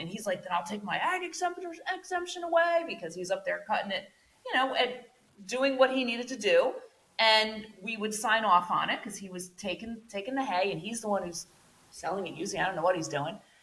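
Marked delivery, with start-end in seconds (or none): 0.4-2.8 heated, very high, rising scream. Retelling what the hay cutter shouted back on the phone: imitating him screaming. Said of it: "He's screaming at me".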